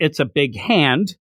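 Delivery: ordinary delivery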